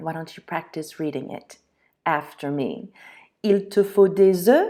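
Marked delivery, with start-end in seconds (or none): 3.4-4.7 rising, question-like tune on "œufs". French lesson, turning a sentence into a question with rising pitch at the end. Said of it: "I turned it into a question, and all you have to do is raise the tone of your voice".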